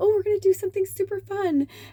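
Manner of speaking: high-pitched, very excited voice. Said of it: "I was so excited".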